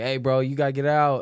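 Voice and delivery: put-on firm commanding voice. Retelling a man ordering someone out of the bathroom: retelling a firm order. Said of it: "He's like".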